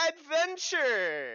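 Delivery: shrill, very high, very loud sarcastic voice. Voicing a character who mockingly imitates Siegfried: Siegfried voice. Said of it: "in his best Siegfried voice goes".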